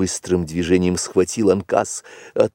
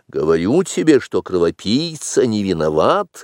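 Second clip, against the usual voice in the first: ordinary delivery, nothing marked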